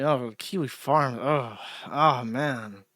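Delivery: put-on uneasy, very slow, drawn-out awkward drawl. Retelling how a group chat reacts to an awkward mention: imitating awkward discomfort. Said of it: "audible awkwardness and uncomfortableness".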